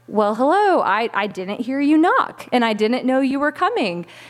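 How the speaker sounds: ordinary delivery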